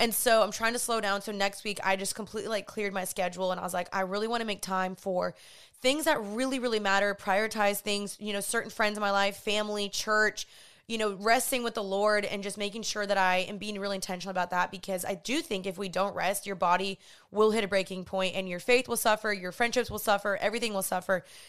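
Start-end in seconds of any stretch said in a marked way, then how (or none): none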